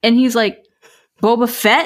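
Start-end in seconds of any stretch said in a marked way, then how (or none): 1.2-1.9 mock pointed, emphatic, distinctly enunciated words. Retelling how a boyfriend repeated a name: imitating boyfriend saying it louder. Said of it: "he said it, like, louder and with more distinction".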